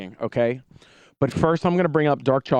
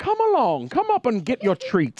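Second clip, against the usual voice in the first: put-on high, swooping, sing-song old-storybook tone; 9 semitones higher than usual. Retelling what Dark Chocolate Professor said to the kids: imitating Dark Chocolate Professor. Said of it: "remember Dark Chocolate Professor".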